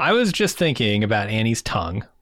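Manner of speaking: ordinary talk, nothing marked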